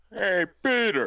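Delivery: very high-pitched cartoon character voice. After recalling hearing his voice in childhood cartoons, imitating a cartoon voice. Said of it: "that was a good impression".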